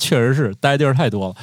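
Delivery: ordinary talk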